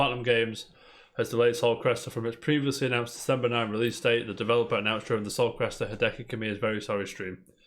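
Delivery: ordinary talk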